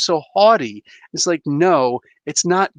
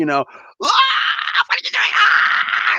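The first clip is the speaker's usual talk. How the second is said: mock, very slow, stretched-out cry. Recapping an Avengers scene, imitating Thor screaming. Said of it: "He's like screaming".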